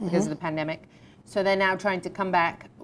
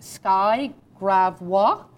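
name given French pronunciation, raised voice; 6 dB louder than usual. Announcing segments with a guest on the show: french accent on sky gravois. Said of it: "that was my most beautiful French accent".

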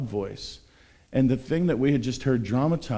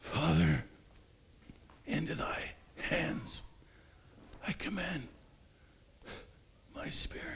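put-on timid voice, much higher, quieter; 5 semitones higher, 12 dB quieter than usual. Retelling a film scene of an actor portraying Jesus, imitating Jesus quiet and timid. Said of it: "very quietly, very timidly, very humbly, just kind of barely eking out the words".

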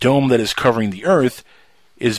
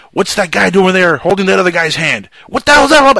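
put-on loud outburst, building and climbing higher; 8 semitones higher, 6 dB louder than usual. Retelling a comedy skit about Jesus at a party: imitating someone flipping out. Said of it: "And he starts flipping out".

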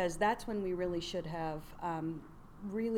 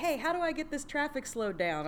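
put-on high-pitched called-out yell; 9 semitones higher than usual. Recalling running for mayor, the speaker repeats the principal across the street, retelling a yell. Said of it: "she's like yelling".

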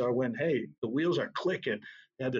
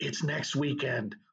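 whispered, breathy voice. Retelling how the band director said the parade was next weekend: imitating someone whispering. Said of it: "he whispers, he goes".

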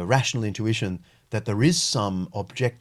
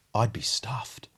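put-on mumbling, muttered under the breath; 3 dB quieter than usual. Retelling a young man's reaction in an auditorium: imitating mumbling under breath. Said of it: "he mumbled under his breath".

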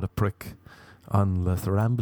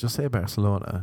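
ordinary delivery

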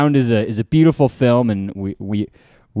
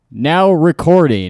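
mechanical robot voice. Explaining to listeners what the backup recording robot says, Craig robot voice. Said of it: "in a robot voice".

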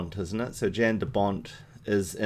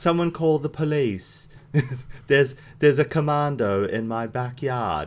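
put-on, very English accent, pitched up; 5 semitones higher than usual. Riffing on a commando loose in essex, the speaker puts on a very english accent. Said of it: "That's my very English accent".

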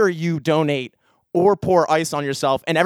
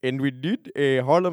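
exaggerated, terrible, slow German accent; 3 semitones lower, 5 dB quieter than usual. Imitating the manager from Germany: Tomas impression, terrible German accent. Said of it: "That was a terrible German accent".

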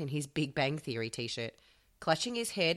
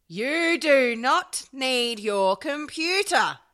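shrill, furious, very high, very loud, drawn-out yell; 10 semitones higher, 10 dB louder than usual. Reading a story aloud, a mother yelling furiously: furious mother yelling. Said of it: "very convincing mother voice".

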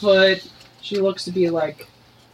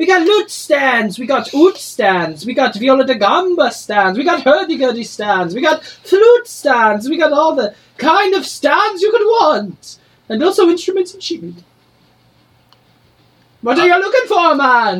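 put-on Jamaican accent, higher and louder; 8 semitones higher, 6 dB louder than usual. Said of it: "I'm gonna try to do something Jamaican".

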